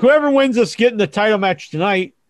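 usual speaking voice

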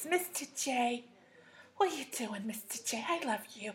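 high, cartoonish character voice. Showing how Harley Quinn talked in the movie, doing a Harley Quinn voice. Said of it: "Harley Quinn talked like this".

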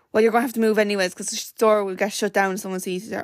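plain

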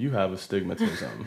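put-on nonchalant, offhand tone. Retelling what the eye doctor said at an eye test: imitating a nonchalant doctor. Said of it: "in, like, a very, like, nonchalant way".

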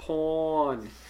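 "porn" drawn out in New York accent. Explaining a phone mix-up, saying porn in a new york accent. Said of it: "Listen to the New York accent".

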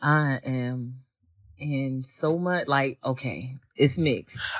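wavering, unsteady voice wobbling throughout. Asked how they feel about him going next year, speaker answers with a wavering voice. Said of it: "I heard that waver in that voice now".

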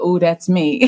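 ordinary talk

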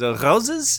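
put-on speaking with a French accent. On a podcast about France, a joke line in a French accent. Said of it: "That's a French accent, bro".

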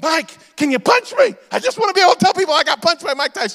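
high, loud, eager voice.

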